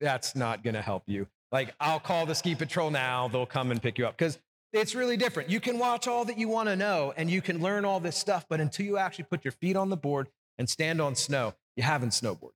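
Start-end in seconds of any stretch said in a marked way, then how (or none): 0.0-4.2 low, sarcastic voice, acted out. Retelling a reaction to a snowboarding student who watched videos: retelling own sarcastic thought. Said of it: "my sarcasm and evil heart is like".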